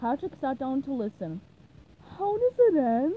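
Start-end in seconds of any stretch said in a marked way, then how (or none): 2.2-3.1 very loud, eager, high voice. Patrick asks Burger Beard how the story ends, eager. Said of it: "He asked eagerly".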